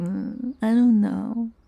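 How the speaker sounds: mocking, noncommittal mumble. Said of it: "you're always like".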